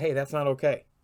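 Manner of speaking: ordinary talk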